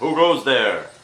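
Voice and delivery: loud, amplified, booming call. Player calling up to a nest high in a tree: amplified voice. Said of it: "my amplified voice again".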